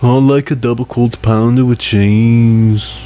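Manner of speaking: put-on Scouse-sounding Liverpool accent. Demonstrating a british accent in conversation with others: put-on liverpool accent. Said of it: "That sounds Liverpudlian to".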